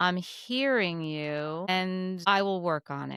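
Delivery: very slow, calm, measured, drawn-out delivery. Retelling how a woman replied when asked how she took criticism: very slowly. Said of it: "Tamara said very slowly".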